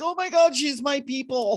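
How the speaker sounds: high, loud, delighted gushing. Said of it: "I'm like".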